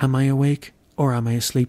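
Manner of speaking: ordinary talk, nothing marked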